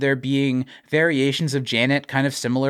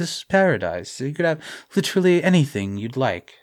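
paradise with a light, gentle, lingering s. Retelling a character's line about paradise: imitating Michael's soft delivery. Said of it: "really using his voice".

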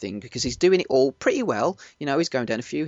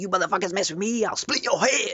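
put-on hard-man, tough-guy voice, pitched up; 6 semitones higher than usual. Retelling a line a film character says to two guards: mr. t voice. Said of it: "I sound like Mister T then".

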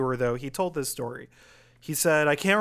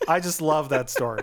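ordinary talk, nothing marked

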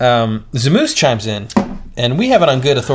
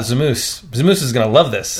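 ordinary talk

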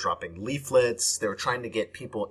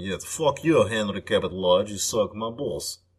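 put-on Russian movie-villain accent; 3 dB louder than usual. Describing the Soviet representative behind his placard, voicing him with a Russian Bond-villain accent. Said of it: "like a Russian bad guy from a James Bond movie".

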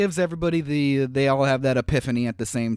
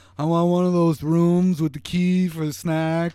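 put-on slurred drunk man voice; 3 semitones higher than usual. Describing a kid's slowed-down phone call faking Peter, in a drunk-sounding Peter impression. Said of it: "make it sound like a drunk dude".

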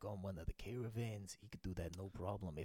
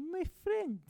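really high-pitched, shrill, very loud voice; 10 dB louder than usual. Player asked to say a sentence in a character's voice: imitating his really high voice. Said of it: "just say a sentence like in his voice".

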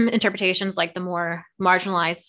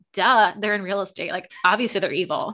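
usual speaking voice

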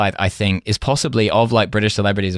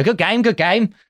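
very high pitched, odd, quirky Cockney voice; 12 semitones higher than usual. Retelling a TV host's catchphrase on coming in: Bruce Forsyth Cockney voice. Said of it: "this kind of slightly weird, like, kind of Cockney voice".

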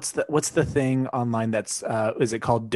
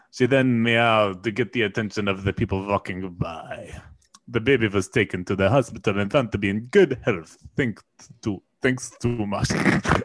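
Russian-accented delivery; 3 semitones lower than usual. Telling a story to a listener, in a Russian accent. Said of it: "I haven't heard you do your Russian accent".

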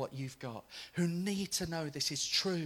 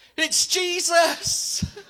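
very high, very loud shout; 13 semitones higher, 14 dB louder than usual. Retelling shouting back to a man whose pain had gone, retelling own shout back. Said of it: "I shouted back".

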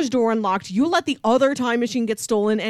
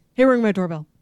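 words rattled off very fast, rapid-fire; 3 semitones lower than usual. Showing how a movie line is delivered: rattled off very fast. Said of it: "It is said that fast".

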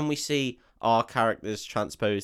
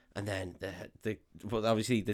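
ordinary talk, nothing marked

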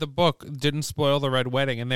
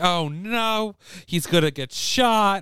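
put-on high, jumpy crowd-like screaming, crying out; 5 semitones higher than usual. Recalling a theater audience at a film's ending, imitating people screaming. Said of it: "were like screaming".

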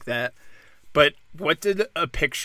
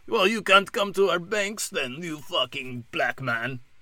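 put-on, unplaceable, vaguely Russian accent; 6 semitones higher than usual. Acting out the bank's imagined reply: put-on accent, maybe Russian. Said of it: "I don't know what that accent is. Russian, maybe?".

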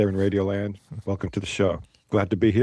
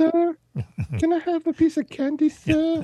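pleading street urchin voice, higher pitch. Answering a question about an urchin at the door: begging street urchin voice. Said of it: "some urchin with a wooden crutch come up to your door".

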